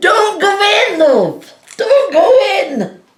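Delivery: mock very high, loud calling out, crowd-style. Recalling the audience calling out to a performer during a play, imitating audience shouting. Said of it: "They were just sh- shouting at me".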